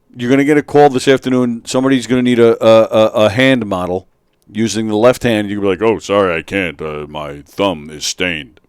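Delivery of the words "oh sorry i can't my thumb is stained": very deep, low, slow, dragged-out drawling voice. Imitating the other speaker turning down a hand-model job: impression of the other speaker. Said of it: "That's my impression of you".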